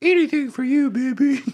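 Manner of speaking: put-on very high voice of a young boy. Retelling replying to an online stranger at twelve: imitating his twelve-year-old self. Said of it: "That was my twelve-year-old [name] impersonation".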